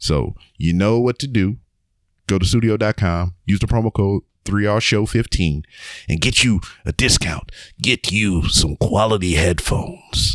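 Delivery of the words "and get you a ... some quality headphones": movie trailer announcer style read. A host reading a sponsor ad on a show: movie announcer voice. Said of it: "that was kind of like a movie announcer voice".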